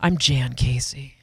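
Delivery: smooth, in-control, sensual and authoritative voice. Imitating how Jan says her name on air, with a lean-in: imitating Jan, sensual voice. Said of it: "When I'm fake Jan, I'm sensual".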